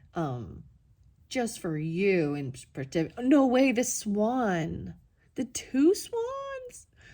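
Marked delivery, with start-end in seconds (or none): 3.2-6.9 excited, raised, swooping sing-song, "swan" stretched out. Doing an unboxing and spotting two swans: excited. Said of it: "I'm getting excited".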